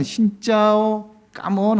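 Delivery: put-on slow, high childlike Vietnamese.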